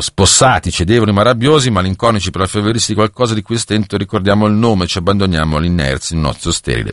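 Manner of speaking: ordinary talk, nothing marked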